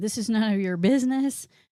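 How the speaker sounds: mock furious, angry shouted yelling. Retelling how the cheating couple yelled at the people who caught them, mock-angry yelling. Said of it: "started like angrily yelling at them".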